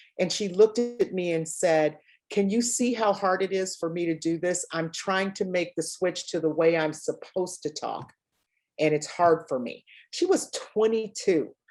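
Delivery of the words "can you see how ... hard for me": ordinary talk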